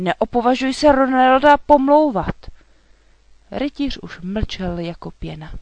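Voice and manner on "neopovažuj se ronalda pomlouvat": enraged, furious roar, shrill and very loud. Narrator reads Lucinka answering the frightened knight, furious roar. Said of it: "Zaryčela Lucinka v stekle".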